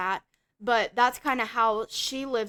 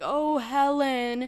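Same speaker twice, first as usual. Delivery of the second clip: crying, tearful moan; 2 semitones higher than usual. Retelling a movie scene of a character crying at a mirror: imitating Trevor crying. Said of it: "he keeps saying it like that, like he's crying".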